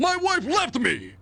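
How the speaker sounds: high, fast, frantic outcry.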